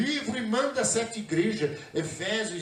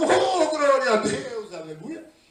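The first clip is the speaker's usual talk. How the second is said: loud, acted-out shouting; 4 semitones higher, 5 dB louder than usual. Retelling praising God outside a terreiro, imitating his own past shouting. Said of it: "E eu gritando".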